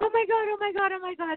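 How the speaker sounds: high, thrilled, excited screaming.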